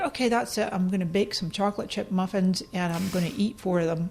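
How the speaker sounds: ordinary delivery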